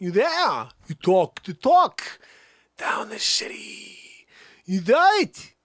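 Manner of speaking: slow, drawn-out Bronx accent. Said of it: "Christopher Walken".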